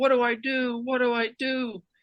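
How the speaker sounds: acted-out high slow scream. Rounding first base, retelling screaming at the first base coach: retelling a scream. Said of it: "And he screams".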